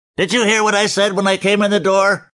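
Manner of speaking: very high, ludicrous cartoon-voice yell. A narrator reads a man shouting at him while grabbing his shirt, cartoon-voice shout. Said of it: "That cartoon voice shouting was ludicrous".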